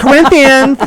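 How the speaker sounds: put-on lisp in a girl voice. Joking that Corinthians is not a girl with a lisp: lisping girl's voice. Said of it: "a girl with a lisp".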